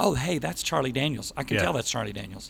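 ordinary delivery

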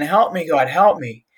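ordinary talk

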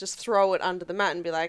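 ordinary talk, nothing marked

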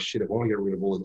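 normal talking voice

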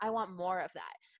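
normal talking voice

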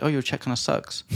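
plain

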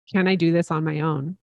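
ordinary delivery

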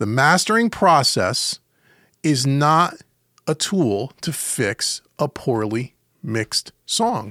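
slow, deliberate, each word spaced out. A podcast host repeats a key point for listeners, slowly and deliberately. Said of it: "I'm going to say that again slowly".

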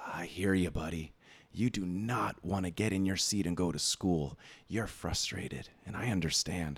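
close, hushed stage whisper. Retelling what was half-whispered close to a screaming child's ear: retelling a half-whisper. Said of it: "But I whispered something like".

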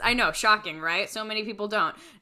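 normal talking voice

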